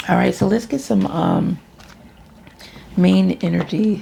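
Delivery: voice cracks on the word "energy". Speaker about to draw cards, voice cracking mid-sentence. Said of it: "my voice cracked".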